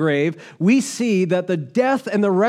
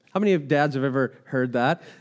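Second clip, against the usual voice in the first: ordinary delivery, nothing marked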